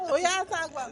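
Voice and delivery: put-on Jamaican accent. Talking about Jamaican accents, quoting Sophia's reaction, imitating Sophia's Jamaican accent. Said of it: "That's not how we sound".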